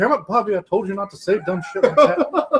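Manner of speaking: cartoon dad character voice. Retelling a cartoon scene, imagining the dad's reaction: Hank Hill voice. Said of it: "you can only hear Hank Hill".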